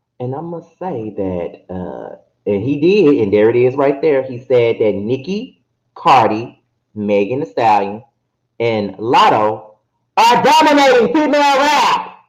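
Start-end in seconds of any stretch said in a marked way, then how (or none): 5.0-12.1 put-on voice with a swooping, up-and-down pitch. Reading out a post the way its writer would: imitating Armand's voice. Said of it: "I have to read it like him in his voice. So that's why I'm saying it like that".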